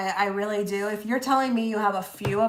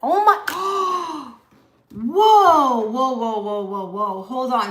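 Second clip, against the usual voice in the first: startled, loud, drawn-out, freaked-out exclamation; 6 dB louder than usual. Reacting to the words 'the witch hunter', suddenly startled and freaked out. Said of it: "I just got freaked out".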